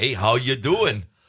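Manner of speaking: put-on accent from Wisconsin. Recalling a commercial part, the speaker delivers their line in a Wisconsin accent. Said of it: "a Wisconsin version of the Wisconsin accent".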